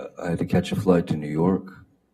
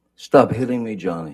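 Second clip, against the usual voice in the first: high, loud, frantic, upset freaked-out scream; 5 semitones higher, 5 dB louder than usual. Retelling what a woman screamed while on the phone, imitating a freaked-out, upset scream. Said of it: "her best um, freaked out, upset voice, high pitched".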